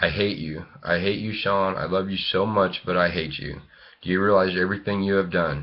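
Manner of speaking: tearful crying outburst. Retelling what was said to a brother in the car: retelling a crying outburst. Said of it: "I was crying and telling".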